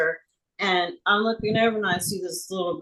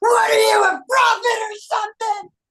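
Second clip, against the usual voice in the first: sudden, very high, loud screaming shout; 5 dB louder than usual. Retelling what he suddenly screamed in reply: imitating a scream. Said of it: "all of a sudden he screams".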